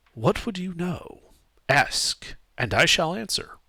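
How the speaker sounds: calm, gentle, otherworldly voice. Voicing a voice that a player hears in their head: soft voice. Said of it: "You hear a soft voice in your head".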